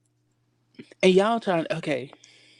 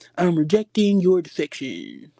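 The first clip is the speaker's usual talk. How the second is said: put-on slow, cute baby talk. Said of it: "trying to do all that baby talk".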